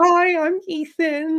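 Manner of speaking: timid, nervous, very high little voice. Retelling first approaching Thomas, who seemed serious, in a mock-nervous greeting. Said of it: "like all all nervous".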